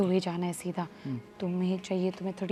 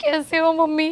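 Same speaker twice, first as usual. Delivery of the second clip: put-on tearful crying, much higher and louder; 9 semitones higher, 8 dB louder than usual. Acting out a scene, the daughter greets her mother while crying. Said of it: "तू ऐसे रोते रोते क्यों आ रही है".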